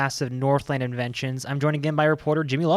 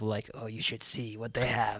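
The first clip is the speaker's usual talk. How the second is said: creepy librarian voice, lower and quieter; 5 semitones lower, 9 dB quieter than usual. Joking with a co-host about how a suggestion sounded, in a creepy librarian voice. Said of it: "sound kind of like the creepy librarian voice".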